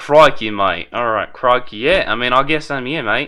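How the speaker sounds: put-on Australian accent. Voicing a character in a game: Australian accent. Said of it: "So I just gotta be like".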